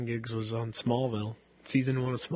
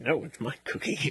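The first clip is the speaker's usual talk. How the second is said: put-on growly monster voice. Retelling a Sesame Street parody scene: Cookie Monster voice. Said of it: "and he's like".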